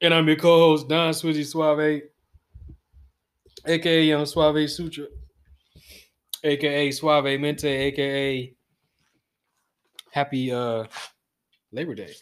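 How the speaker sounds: tearful voice, sounding near tears. Podcast co-host introducing himself on the show, sounding like he is crying. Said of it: "why you sound like you crying".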